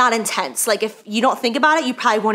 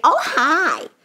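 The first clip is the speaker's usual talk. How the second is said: put-on, high, cute, cutesy little voice; 7 semitones higher than usual. Naming a makeup shade the way it has to be said: little put-on voice. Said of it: "you have to say it like that... We have like a little voice for them".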